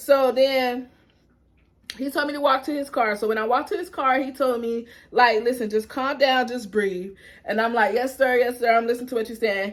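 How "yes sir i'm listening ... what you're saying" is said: ordinary talk, nothing marked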